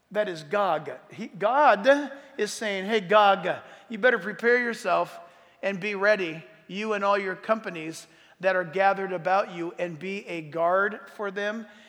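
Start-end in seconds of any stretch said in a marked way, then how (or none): none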